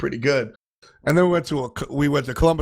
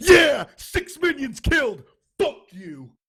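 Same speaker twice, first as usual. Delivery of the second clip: wild, triumphant screaming, pitched way up, swooping; 13 semitones higher than usual. Retelling how a teammate screamed every time he cleared a wave, imitating someone screaming. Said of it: "He's screaming every time he clears a wave".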